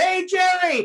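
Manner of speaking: mock hollering, high, called-out yell. Recalling a friend yelling at someone walking by with a posse: retelling a yell. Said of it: "Johnny starts yelling at him".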